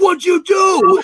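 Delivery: shrill, very high, loud comedic outburst. Quoting a car scene from a movie: Tommy Boy voice. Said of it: "I got the voice for Tommy Boy".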